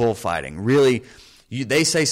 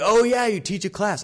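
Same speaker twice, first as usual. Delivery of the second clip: high, raised, taunting yell; 10 semitones higher than usual. Retelling a heckler yelling even louder: imitating a heckler yelling louder. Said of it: "he yells even louder".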